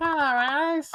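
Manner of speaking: very high, loud, dopey silly voice.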